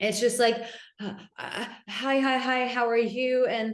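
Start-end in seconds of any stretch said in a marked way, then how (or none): 1.0-3.4 slow, nervous, fearful, stumbling stammer. Acting out a fearful man greeting a woman: imitating a nervous man. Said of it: "he's in a state of fear".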